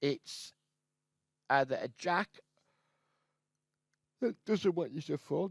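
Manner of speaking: yawning, words breaking. Commentating a poker hand, speaker talks through a yawn. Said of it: "excuse me for yawning".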